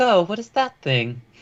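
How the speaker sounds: put-on woman's voice. Voicing a character asking about a dragon: woman's voice. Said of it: "in a woman's voice".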